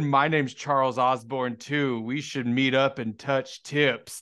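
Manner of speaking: put-on old Midwestern veteran man voice. Retelling what an older man said to him, imitating Charles Osborne. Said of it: "old like Midwest like veteran type guy".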